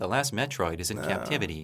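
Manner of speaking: soft, light delivery without any gravitas. Discussing a game's opening voice line, the speaker mimics it: flat Dan Owsen line reading. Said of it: "should have been more gravitas in that line reading".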